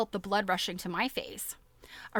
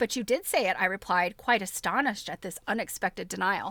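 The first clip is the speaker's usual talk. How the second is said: plain reading voice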